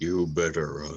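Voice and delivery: quiet, under-the-breath half-whispered aside. Half-whispering a line to oneself in character: half-whisper. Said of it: "I'm just gonna whisper to myself".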